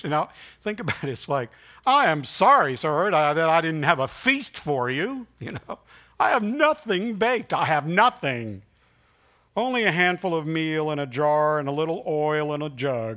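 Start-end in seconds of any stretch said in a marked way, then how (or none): 1.9-13.2 mock, heavy sarcasm in a raised voice. Retelling the widow's reply to Elijah's request: imitating sarcasm. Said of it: "she responds with sarcasm".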